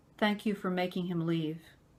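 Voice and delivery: mock dead-serious, grave, solemn voice. Retelling what the seven-year-old daughter said: imitating a very serious tone. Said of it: "she said it just like that, very serious".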